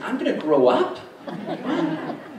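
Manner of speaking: put-on high, loud, shocked, incredulous little kid squeak.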